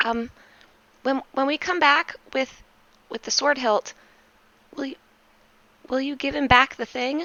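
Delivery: bashful, sheepish, very high-pitched small voice. A player speaking as s q asks a question, sheepish.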